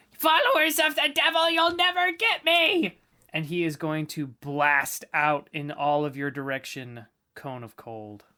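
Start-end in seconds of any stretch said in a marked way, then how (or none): 0.2-3.0 shrill scream at the top of the lungs. Narrating a game scene, a figure in the darkness screaming at the top of his lungs. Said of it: "he screams at the top of his lungs".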